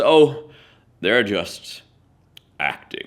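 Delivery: mock superior, unhurried, self-satisfied, smug, languid drawl. Retelling what a veteran actor said backstage: imitating a smug, languid tone. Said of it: "in his most smug, languid tones".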